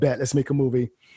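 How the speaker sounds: ordinary delivery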